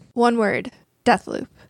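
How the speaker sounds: long, suspenseful dramatic pause after one word. Answering what has been going on, with a dramatic pause: dramatic pause. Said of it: "I did such a dramatic pause".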